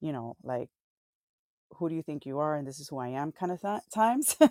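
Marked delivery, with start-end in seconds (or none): 1.7-3.3 mock stern, confident voice, quieter. Retelling how Jesus answers his questioners: imitating stern, confident Jesus. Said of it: "this is one of those more stern times, more confident times".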